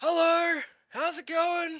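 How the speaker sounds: very high, very loud, shrill, drawn-out holler. Playing a dwarf who greets people from shouting distance: character yelling a greeting. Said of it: "yell out".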